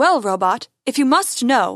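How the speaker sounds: ordinary delivery, nothing marked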